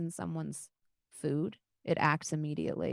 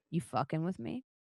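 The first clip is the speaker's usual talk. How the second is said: menacing, intimidating character voice. Voicing a character who locks eyes and steps closer: intimidating character voice. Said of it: "she looks at you and she says".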